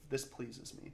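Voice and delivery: mock deadpan delivery. Mocking a friend who shows no emotion: imitating Matthias's flat, unexcited tone. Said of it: "he'll be like, quote".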